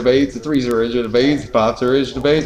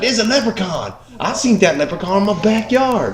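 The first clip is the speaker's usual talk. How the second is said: fake Georgia southern accent, pitched up; 8 semitones higher than usual. Retelling a leprechaun video, the speaker imitates the Georgia locals in a put-on southern accent. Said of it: "I'm doing a really racist impression".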